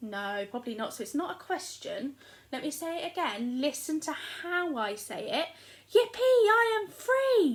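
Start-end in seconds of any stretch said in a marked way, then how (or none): 5.9-7.6 very loud, shrill, high, booming excited shout. Speaker demonstrating to listeners how the sentence sounds; excited shout. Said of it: "Does he sound like he's shouting or he's excited?".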